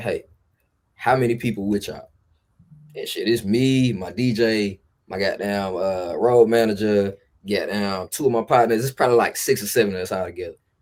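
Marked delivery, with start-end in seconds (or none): 0.0-2.1 put-on whispering. Retelling a fan whispering a question after a show: imitating a whisper. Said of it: "whisper in my ear. She say".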